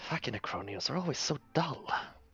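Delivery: muttered half-whisper under the breath. Muttering in character to a barbarian friend about the Necronians: half-whispering under breath. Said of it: "I kinda whisper under my breath".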